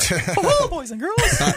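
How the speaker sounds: squeaked out, very high pitched. After joking about accents, speaker tries an old impression: Mickey Mouse voice. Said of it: "I used to be able to do Mickey Mouse really well".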